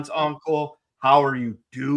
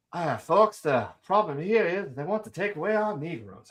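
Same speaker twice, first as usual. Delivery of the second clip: gentle southern drawl; 3 semitones higher, 4 dB quieter than usual. Planning a costumed colonel character, the speaker tries out Kentucky Colonel Kendo's southern drawl. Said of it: "I could do the soft southern drawl".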